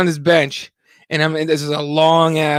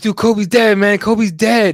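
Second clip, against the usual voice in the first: mock upset, devastated yelling, pitched up; 5 semitones higher, 3 dB louder than usual. Retelling a passerby at a mall yelling into his phone: retelling a loud yell. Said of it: "very loudly yelling into his phone".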